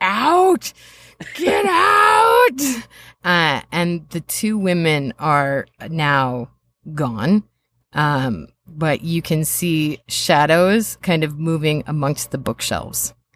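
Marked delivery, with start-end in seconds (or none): 0.0-2.6 very high, shrill shriek, "out" drawn out. Narrating the scene, speaker voices a man with a device on his head, screaming. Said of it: "screaming like".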